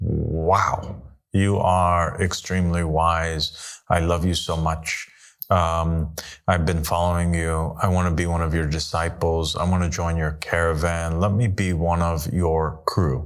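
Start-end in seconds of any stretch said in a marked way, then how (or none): none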